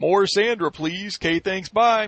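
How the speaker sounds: put-on Atlanta accent. Mocking online commenters, the speaker imitates their request: imitating somebody from Atlanta. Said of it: "That's my imitation of somebody from Atlanta".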